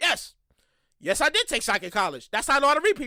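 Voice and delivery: mock bone-dry, low deadpan delivery. Quoting the other man's answer to his question, retelling a deadpan reply. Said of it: "Once again, deadpan".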